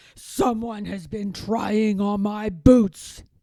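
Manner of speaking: big, loud, booming delivery. Reading the story, Papa Bear finds his boots moved, in his big booming bear voice. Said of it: "he boomed in his big bear voice".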